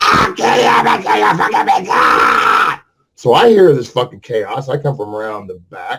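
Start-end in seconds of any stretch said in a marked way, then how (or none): 0.0-1.9 mock very high, frenzied screech, screaming. Retelling a neighbor's fight, imitating Bridget screaming threats. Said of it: "She talks like this".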